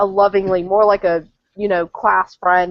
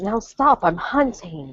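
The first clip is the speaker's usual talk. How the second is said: soft whisper; 3 dB quieter than usual. Voicing her character, who swats off a man while hunting: whispering. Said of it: "She whispers to Lucius".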